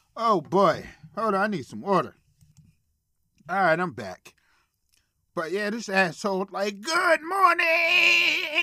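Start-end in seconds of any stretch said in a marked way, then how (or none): 6.8-8.7 fake, very high, loud, "morning" stretched out. Retelling a prank video, imitating the boyfriend: loud mocking greeting. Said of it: "all loud and whatnot".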